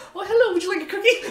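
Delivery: friendly turtle woman character voice. Acting out the friendly turtle lady who keeps showing up: voicing a friendly turtle lady. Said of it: "that little friendly turtle lady that we keep seeing just shows up".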